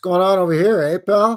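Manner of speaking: very loud, high pitch, menacing yet friendly. Retelling how people confront a filmer: imitating a threatening Canadian. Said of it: "he's ready to punch you right in the lips".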